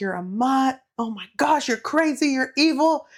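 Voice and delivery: put-on all-out yelling. Retelling the scene where Peeta runs at her and chokes her, imitating Peeta yelling. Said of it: "starts yelling like".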